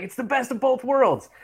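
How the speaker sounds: deadpan goofy coach voice. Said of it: "like, deadpan goofy".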